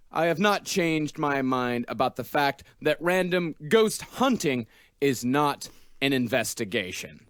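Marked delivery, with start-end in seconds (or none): none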